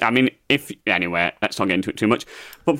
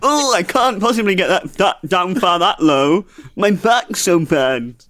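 higher, whiny, complaining put-on voice. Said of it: "Is that your impression of me?".

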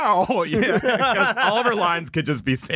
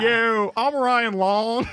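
put-on raspy voice; 2 semitones higher than usual. Trying the impression again after being told it sounds generic: Ryan Long impression. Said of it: "Let me try and do a Ryan Long impression".

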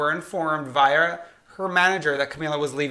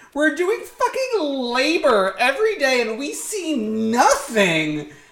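mock dramatic delivery, higher; 10 semitones higher than usual. Reading out a leaked quote from Lauren: imitating a dramatic complaint. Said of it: "very dramatically".

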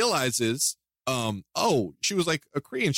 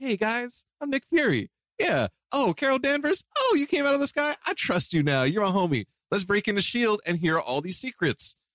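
bright, happy-go-lucky, carefree voice, pitched up; 7 semitones higher than usual. Retelling how a character acted in a movie: imitating a happy-go-lucky Nick Fury. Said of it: "super happy-go-lucky".

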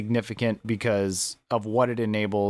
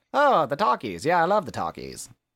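put-on sing-song, old-timey radio-era voice; 6 semitones higher than usual. Co-host joking about listeners over 70, in an old-timey radio voice. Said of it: "Everyone above 70 has the old-timey radio voice".

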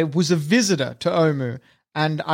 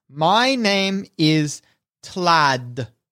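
hesitant, stilted, halting speech. A player's drow character steps forward to introduce himself, in halting Common. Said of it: "he speaks in like halting common".

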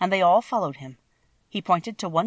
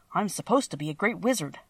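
ordinary delivery

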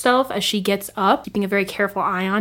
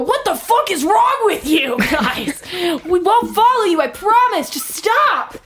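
high-pitched dwarf character voice; 10 semitones higher, 4 dB louder than usual. Voicing the dwarf who begs the attackers to stop: voicing the dwarf. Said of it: "You hear the dwarf go".

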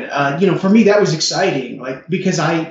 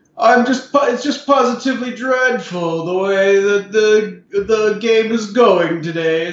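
rich, slow drawling voice, pitched higher; 6 semitones higher than usual. Describing a man's voice they hear in their head, a rich, slow drawl. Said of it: "that really rich and slow draw".

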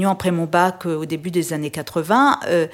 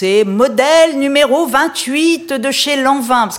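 mock-learned scholarly tone, much higher; 7 semitones higher, 6 dB louder than usual. Playing fashion show with a Barbie, announcing the model in a mock-learned tone. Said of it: "avec un ton docte".

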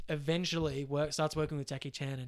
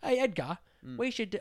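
fake, put-on British accent, pitched up; 7 semitones higher, 4 dB louder than usual. Imitating a director pitching a one-take scene to Edgar: put-on British accent. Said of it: "I don't know why it'd be British".

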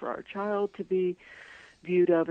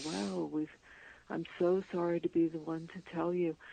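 soft, sad, sorrowful, tragic-sounding delivery; 5 dB quieter than usual. Retelling what a woman said on a phone call, imitate her sad voice. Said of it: "this very sort of sad voice".

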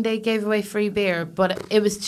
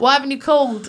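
English fatherly voice; 4 semitones higher than usual. Asked by the other speaker to do an accent, imitating their dad's English voice. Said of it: "I can impersonate my dad".

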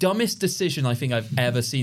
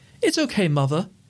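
exaggerated British accent; 4 semitones higher than usual. Imitating the creepy film children: stereotypical british accent. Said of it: "the very stereotypical, like, British accents".

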